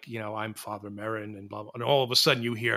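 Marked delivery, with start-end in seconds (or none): 0.3-1.7 very quiet, barely there half-whisper. Retelling a film scene where a priest arrives: imitating a quiet half-whisper. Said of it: "quiet whispers".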